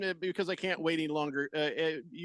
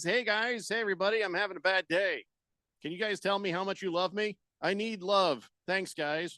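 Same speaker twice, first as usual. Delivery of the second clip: ordinary talk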